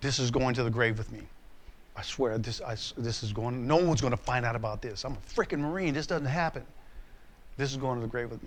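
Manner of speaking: hushed, low, half-whispered voice. Retelling own past words to the Lord while driving: retelling a half-whisper to the Lord. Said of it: "And I'm whispering to the Lord".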